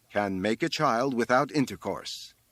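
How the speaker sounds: ordinary delivery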